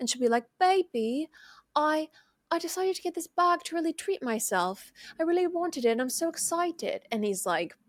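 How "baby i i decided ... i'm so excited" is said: put-on Australian accent, higher. Retelling a couple's video, quoting the wife: imitating an australian accent. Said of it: "your Australian accent".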